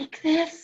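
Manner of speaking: very small, tiny little voice. Told to use a tiny voice, a character tries it: tiny quiet little voice. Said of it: "you have to use a tiny, quiet little voice".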